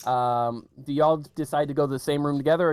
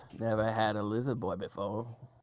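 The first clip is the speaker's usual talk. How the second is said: quieter muttering under her breath; 4 semitones lower, 8 dB quieter than usual. The game master voices a goblin woman eyeing a kobold, muttering under her breath. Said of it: "hear her under her breath".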